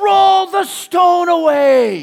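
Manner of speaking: very high, very loud, very slow, drawn-out, commanding, intense shout. Imagining how Jesus would say the line, Jesus shouting with great intensity. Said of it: "Some of you, I just woke up. ... He's saying it with this intensity".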